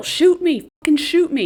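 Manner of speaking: play-acted, high-pitched kicking-and-screaming yelling outburst. Retelling how a character yelled at Gale: imitating someone yelling. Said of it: "She was yelling at Gale".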